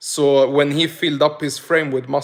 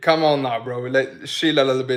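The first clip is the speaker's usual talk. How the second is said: plain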